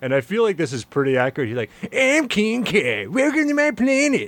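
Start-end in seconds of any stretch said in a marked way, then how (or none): 2.0-4.3 very high, swooping cartoon voice, pitched way up. Imitating a voice actor's take on King Kai, in a South Park-like King Kai voice. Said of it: "He sounds like a South Park character".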